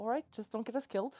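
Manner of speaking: hushed, very quiet, close-up whisper. Speaking in character into another character's ear: whispering in character. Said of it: "whisper into her ear".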